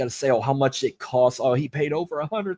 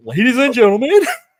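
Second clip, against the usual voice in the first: nervous, high, raised ring-announcer voice; 9 semitones higher, 10 dB louder than usual. Retelling the ring announcer's nervous entrance after a deep breath, imitating nervous Howard Finkel. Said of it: "I guess he was just so nervous".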